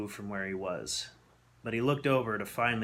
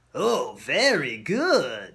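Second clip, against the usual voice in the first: raspy, raised voice, "good" drawn out; 4 semitones higher, 8 dB louder than usual. Reading a story aloud, the masked thin man orders Victor: raspy voice. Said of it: "the raspy voice said".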